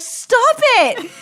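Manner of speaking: very high, very loud, shrill, fed-up, exasperated yell. Recalling watching a character's bad choices on TV, retelling a yell at the TV. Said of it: "I was yelling at the TV".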